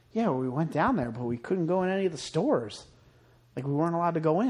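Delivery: ordinary talk, nothing marked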